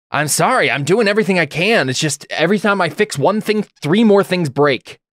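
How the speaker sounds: worn-out, exasperated tone. Describing a man fixing a ship who looks up at you, acting out exasperation. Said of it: "with exasperation and just be like".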